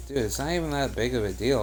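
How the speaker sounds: normal talking voice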